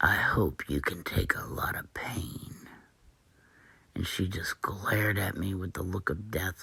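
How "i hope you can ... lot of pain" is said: strange, sinister, slow, breathy, menacing whisper. Retelling a threat from a woman at the table: imitating a strange evil voice. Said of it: "this strange voice came out of her".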